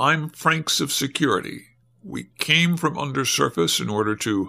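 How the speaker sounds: ordinary delivery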